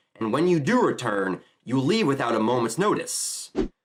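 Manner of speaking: ordinary talk, nothing marked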